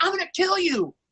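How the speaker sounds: shrieking, very high scream. Showing older actor kids how a threat sounds: screaming a threat. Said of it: "Someone screaming".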